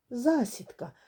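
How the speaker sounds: abrupt, sudden, blurted cry. Narrating a story, the rabbit cries out and hides behind Fufu: sudden cry. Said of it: "раптом вигукнув кролик".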